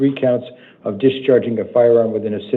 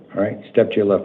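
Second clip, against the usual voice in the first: plain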